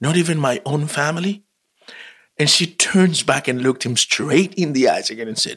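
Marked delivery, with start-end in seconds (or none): 0.0-1.4 acted-out, can't-believe-it disbelieving tone. Retelling a scene where Charles questions the Queen: imitating disbelief. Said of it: "in, like, disbelief".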